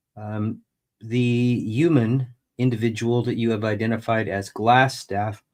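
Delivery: ordinary talk, nothing marked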